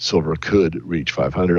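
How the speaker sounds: the word could stressed, weight laid on it. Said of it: "I emphasize the word could".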